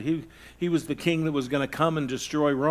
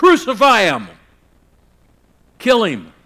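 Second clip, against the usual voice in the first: high, loud yelling like a crowd. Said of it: "standing out there yelling".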